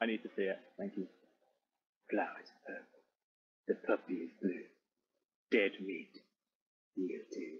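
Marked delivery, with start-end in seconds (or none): 2.1-7.6 very romantic, much lower, slower. Friends urge the speaker to say it: very romantic manner. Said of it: "say it in a like very romantic manner".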